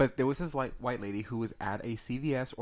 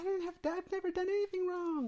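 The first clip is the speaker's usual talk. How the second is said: mock female scream, higher pitch. Retelling a handcuffed woman's reaction to police: imitating a woman screaming. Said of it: "she starts screaming like".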